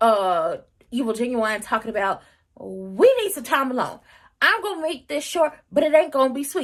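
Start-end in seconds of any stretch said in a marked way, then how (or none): 2.6-6.7 play-acted theatrical, over-projected announcing voice, yelling. Retelling a character yelling at another character: imitating someone yelling. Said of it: "sitting up there yelling at".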